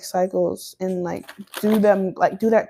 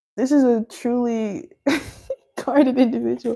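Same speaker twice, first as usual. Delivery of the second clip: speaking through laughter mid-sentence; 3 semitones higher than usual. Describing a very guarded person, laughing while talking. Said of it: "sorry for laughing".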